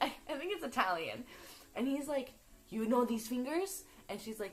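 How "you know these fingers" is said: ordinary talk, nothing marked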